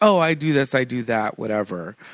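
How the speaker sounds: plain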